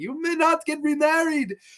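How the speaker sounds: very high-pitched, furious screaming. Telling a Fulci story, imitating Paolo Marco screaming at Fulci on the call. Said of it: "who's screaming at him like".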